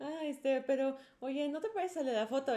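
mock nervous stammering. Retelling a nervous question to a stranger in a car: imitating nervous stammering. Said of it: "Me puse todo nervioso".

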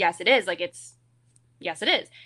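normal talking voice

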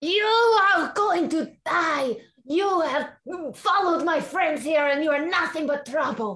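shouting angrily. Voicing Tatiana yelling a threat toward the woods: yelling. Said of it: "hear Tatiana yelling about something".

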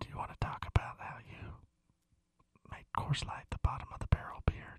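unvoiced, playful whisper.

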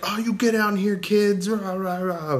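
very high-pitched camp-manager voice. Retelling what Mel shouted at kids on a roof: imitating Mel as camp manager. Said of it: "He's being, like, camp manager".

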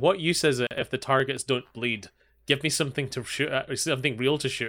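ordinary talk, nothing marked

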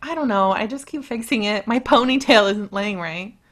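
ordinary talk

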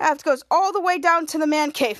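ordinary talk, nothing marked

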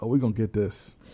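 quiet, unenthusiastic sigh.

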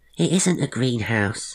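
small, shrill, high-pitched voice. Narrator reading a small character correcting John, in a little shrill voice. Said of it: "chimed in a little shrill voice".

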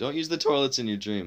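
voice cracking. Repeating a warning to listeners, voice cracking. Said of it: "My voice cracked again".

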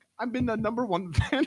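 very high-pitched put-on Indian accent. Imitating a fan's mean message in an Indian-sounding accent. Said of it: "He sounds Indian".

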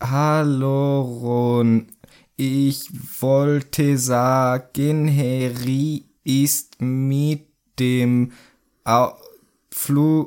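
halting, word-by-word reading like a beginner. Acting out Ron reading a letter aloud: Ron reading haltingly. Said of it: "wie Kinder, die gerade lesen lernen, das vorlesen".

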